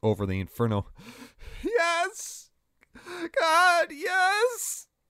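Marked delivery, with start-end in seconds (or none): 1.6-4.8 very high, stretched, drawn-out shriek of pain. Ryan, engulfed in flames, answers Chaos, screeching in pain. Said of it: "Ryan screeched in pain".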